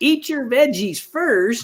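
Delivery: high, terrible put-on grandma voice. Speaker quoting what grandparents told them as children, terrible grandmother impression. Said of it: "There's a terrible impression of my grandmother's".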